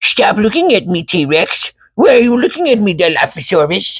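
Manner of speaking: very high-pitched, silly comedy voice. Imagining a comedy movie where dinosaurs stare at him: Adam Sandler impression. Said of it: "I wanna see Adam Sandler in a Jurassic Park movie going".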